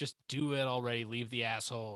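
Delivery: plain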